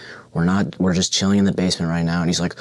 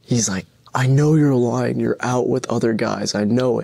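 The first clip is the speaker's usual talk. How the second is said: mock crying, higher pitch; 4 semitones higher than usual. Retelling a phone fight, he accuses her of lying: imitating someone crying. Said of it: "he's still crying".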